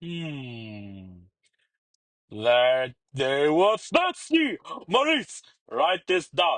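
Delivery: pompous, playful, flamboyant royal drawl, long "hmm". As King Julien, giving an order to Maurice: King Julien voice. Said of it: "King Julian reclined on his royal throne".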